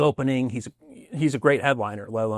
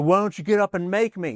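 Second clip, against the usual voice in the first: mock drunken slurring, much higher pitch; 8 semitones higher than usual. Retelling a quarrel, quoting the first guy, imitating a drunk slurring. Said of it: "the first guy who was slurring said".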